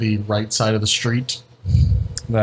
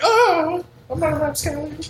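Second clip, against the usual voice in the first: very high, swooning faint voice. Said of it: "he does, like, this, this fainting".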